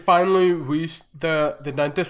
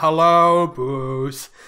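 put-on bored, flat voice. Quoting a shark at the Sharks Anonymous bit: imitating a bored shark. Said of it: "bored when they're doing the".

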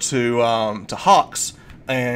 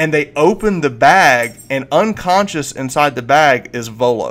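plain

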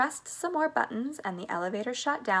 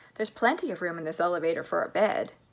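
plain reading voice

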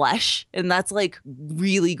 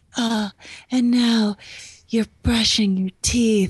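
breathless, high, panting narrator voice; 5 semitones higher than usual. Imagining a woman narrating what the speaker does: imitating breathless panting narration. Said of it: "where she's just panting and just like".

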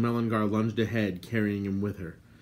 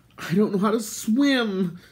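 very high cry through chattering teeth; 11 semitones higher, 6 dB louder than usual. Terran answers Gwydion, crying out, teeth chattering. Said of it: "Terran cried, his teeth chattering violently".

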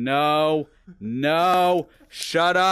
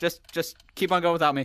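ordinary talk, nothing marked

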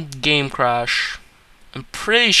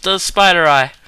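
ordinary talk

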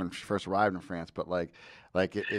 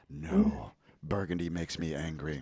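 dramatic, deep baritone movie-line delivery; 3 semitones lower, 5 dB quieter than usual. Retelling a man's remark, delivered dramatically like a line in a movie. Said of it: "a line in a movie".

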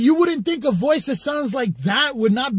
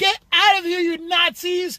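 little high feminine voice, slow, straining to sound strong; 5 semitones higher than usual. Retelling how he and a friend kept repeating a voice, mocking a feminine tough voice. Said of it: "making fun of that voice".

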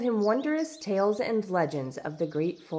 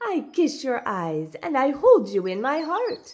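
happy, full of gladness, raised, pitched-up voice; 5 semitones higher, 5 dB louder than usual. An old guest thanks the hosts who let her stay, speaking happily. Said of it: "Baba Yaga said happily".

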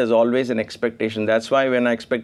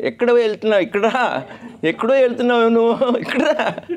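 put-on, very high, shrill yell; 11 semitones higher than usual. Retelling an older devotee calling out to the teacher: imitating someone yelling. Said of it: "What is this she's yelling?".

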